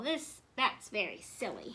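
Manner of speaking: usual speaking voice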